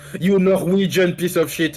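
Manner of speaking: strong French accent. Told he has a heavy French accent, the speaker shows a very strong French accent. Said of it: "This is a very strong French accent".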